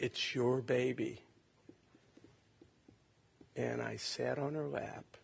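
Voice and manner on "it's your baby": normal talking voice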